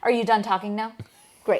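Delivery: put-on serious, curt tone. Retelling how the guide cut off talkers: imitating a serious, curt tone. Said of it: "He was very serious".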